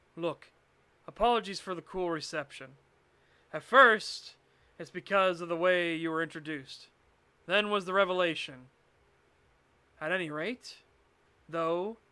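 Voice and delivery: ordinary talk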